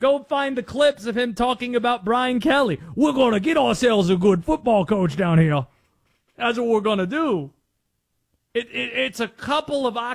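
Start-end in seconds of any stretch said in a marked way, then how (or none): 2.9-7.5 loud, cartoonish exaggerated Southern drawl. Mocking how a guy talks about Brian Kelly, in a Foghorn Leghorn impression. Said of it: "He sounds like Foghorn Leghorn".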